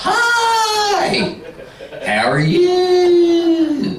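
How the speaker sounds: very high, swooping Southern drawl, "hi" stretched out. Teaching a group about Southern speech, the speaker demonstrates a stretched-out Southern accent. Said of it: "They stretch the words out".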